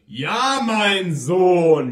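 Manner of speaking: very loud, thundering, booming roar. God answers a man who shouted toward the angels, roaring. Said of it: "brüllte Gott".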